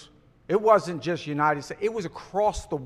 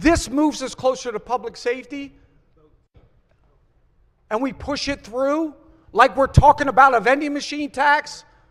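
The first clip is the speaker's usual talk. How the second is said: audibly upset, high and raised voice; 8 semitones higher, 5 dB louder than usual. A legislator arguing for a public safety measure, sounding upset. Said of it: "I'm sorry if I sound upset".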